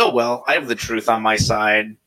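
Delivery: ordinary delivery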